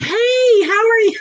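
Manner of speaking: fake-friendly, overdone niceness, very high pitch. Describing what they do with a bad driver, putting on an overly nice greeting. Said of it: "I like be ten times more nicer than I should be".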